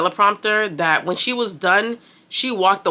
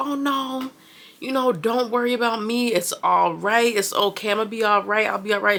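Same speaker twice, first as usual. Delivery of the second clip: mock light, breezy tone through laughter; 3 semitones higher than usual. Retelling a contestant's goodbye to the other girls, imitating Tiffany laughing while reassuring. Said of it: "laughing, just saying bye to the girls".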